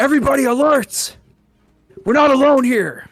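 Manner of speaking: high-pitched, loud scream. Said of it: "I scream out".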